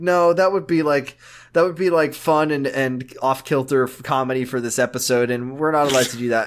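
ordinary talk

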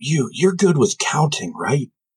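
whispered speech. A limping figure approaches the listener and asks a question, in a whisper. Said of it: "in a whisper, it says".

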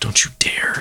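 whispered under breath. A player speaking as their character while running at an archer, whispered under breath. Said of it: "I'm going to whisper under my breath".

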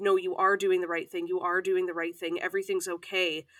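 ordinary talk

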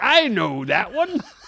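mock, put-on old man voice. Teasing the other speaker for piping up: imitating an old man. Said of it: "you piped up like an old man".

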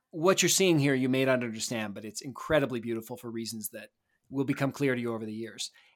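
usual speaking voice

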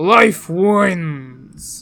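gravelly put-on tree creature voice. Showing a character voice, told it is too gravelly: Maokai voice. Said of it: "you're getting too gravelly".

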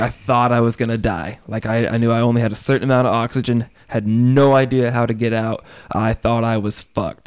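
plain

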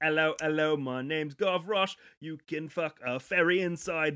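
put-on barker voice. The speaker plays Gavroche from Carnival Row, now a brothel barker; Gavroche as carnival barker. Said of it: "He's a barker now for the brothel".

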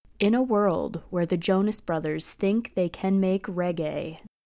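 epic, dramatic movie trailer narrator voiceover. Kicking off the week's picks, the speaker launches into a movie trailer voice. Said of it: "movie trailer voice".

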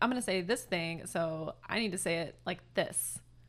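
plain

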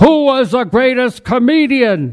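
loud, stern argumentative voice. In a library, a gentleman near the narrator starts an argument: loud, stern voice. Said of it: "with a loud, stern voice".

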